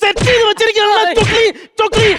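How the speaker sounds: angry shouting.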